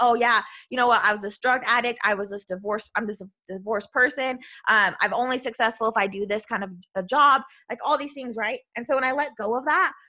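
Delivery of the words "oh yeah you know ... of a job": ordinary talk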